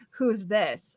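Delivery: ordinary talk, nothing marked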